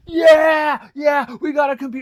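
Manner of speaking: acted-out, very high, very loud, overjoyed kids cheering. Retelling boys hearing their dad got them a computer, imitating ecstatic kids. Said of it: "they're just ecstatic".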